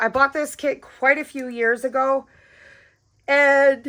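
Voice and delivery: speaking through a yawn. Presenting their diamond art kits one by one, yawning while talking. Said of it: "sorry, yawning".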